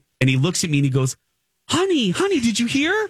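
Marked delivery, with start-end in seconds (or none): 1.7-2.9 put-on very high, sweet baby-talk voice. Retelling how Colin spoke to the speaker like a kid. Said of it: "like I'm a kid".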